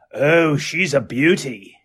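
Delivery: slow, bad put-on Australian accent. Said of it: "Gotta work on my Steve Irwin".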